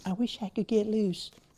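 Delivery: very high, mocking parody voice. Imitating painting students who always say they wish they could paint loose: mocking tone. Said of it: "Forgive me for putting on a mocking tone".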